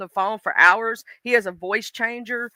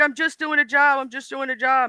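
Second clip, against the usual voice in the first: put-on crying, tearful pleading voice, pitched higher; 3 semitones higher than usual. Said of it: "he literally had her in tears".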